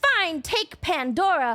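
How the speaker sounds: mad, annoyed, begrudging tone. Retelling a myth and quoting Zeus: imitating angry Zeus. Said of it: "mad for a while".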